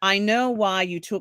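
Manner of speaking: put-on British accent. Retelling a scene where someone approaches a man: British accent. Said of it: "they have to say in a British accent".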